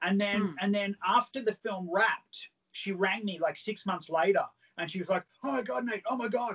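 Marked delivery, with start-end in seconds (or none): 5.4-6.6 high, delighted, elated gushing exclamation. Retelling how a woman sounded when she phoned months later, imitating her happy voice. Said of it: "You sound so happy".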